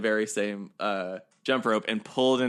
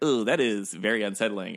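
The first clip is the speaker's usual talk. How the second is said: ordinary talk, nothing marked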